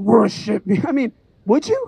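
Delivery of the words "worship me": demonic, devil-like voice. Imagining the devil showing up at your front door: demonic voice. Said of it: "in a demonic voice".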